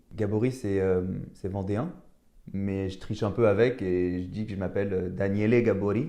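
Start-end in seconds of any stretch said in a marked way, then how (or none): 5.1-6.1 Italian accent and pronunciation. Showing how he says his own name to pass as Italian: Italian accent. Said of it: "avec l'accent".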